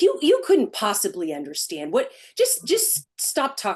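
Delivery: put-on snide, condescending, snarky, swooping dismissive tone. Retelling a gentleman's reply to a comment: imitating a snarky gentleman. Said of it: "he was snarky".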